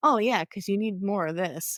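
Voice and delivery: dry, sarcastic, mock-approving tone. Retelling a thought while buying Father's Day gifts: imitating own sarcastic remark.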